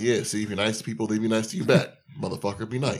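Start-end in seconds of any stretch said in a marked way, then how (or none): 0.0-1.9 put-on smug voice. Recapping a scene where Glover answers after the kid lied for them, mimicking Glover, smug. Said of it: "Glover's like smugly like".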